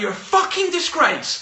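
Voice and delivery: put-on very high-pitched, all-out screaming. Retelling how someone stood on a chair screaming at the speaker: imitating a boss screaming. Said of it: "started screaming at me".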